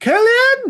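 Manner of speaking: high, loud shout. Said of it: "I shout into the icy cold void".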